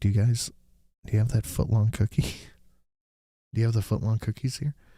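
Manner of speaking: discreet, confiding, hushed stage whisper. Retelling leaning in to the lady at the end of the line, retelling a half-whisper. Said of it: "I'm like whispering to her".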